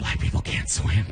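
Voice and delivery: hushed, low whisper. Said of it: "First of all, why are you whispering?".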